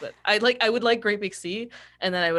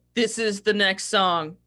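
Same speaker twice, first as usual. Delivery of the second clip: imitated, mock deadpan delivery; 3 semitones higher, 4 dB louder than usual. Mocking bands that just stand and play: imitating a deadpan performer. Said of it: "so deadpan".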